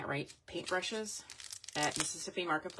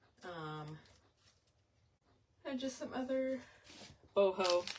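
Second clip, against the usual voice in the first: words stretched by yawning; 4 semitones higher than usual. Showing earrings to viewers, yawning while talking. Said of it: "Sorry I'm yawning".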